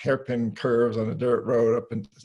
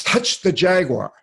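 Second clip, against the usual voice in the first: high, shouted, yelling voice; 6 semitones higher, 8 dB louder than usual. Recounting being in the jungle with a shaman, retelling the shaman's yelled command. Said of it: "the shaman yells at me".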